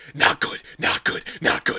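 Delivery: very loud orc monster stage whisper. Voicing an orc peeking around a corner: loud orc whisper. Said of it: "In a very loud whisper than an orc would".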